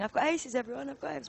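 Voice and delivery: play-acted drunk man's voice, shouting, boastful. Retelling how a drunk player announced his aces: imitating a drunk man shouting. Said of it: "he just was shouting".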